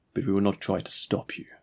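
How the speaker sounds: ordinary delivery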